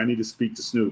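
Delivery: ordinary delivery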